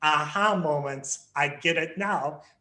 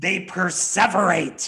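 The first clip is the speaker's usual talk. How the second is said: loud, sinister, spooky, scary voice; 2 semitones higher, 5 dB louder than usual. Reading the 'they' statements while a partner reads the 'we' statements, in a scary voice. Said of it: "read the they statements in a scary type of voice".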